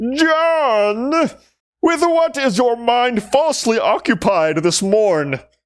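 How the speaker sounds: very high, slow raging shout, one word drawn out. Narrating a scene where a raging man kicks in the door and confronts john, raging shout. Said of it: "he looks at you and he shouts".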